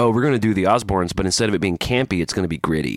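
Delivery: normal talking voice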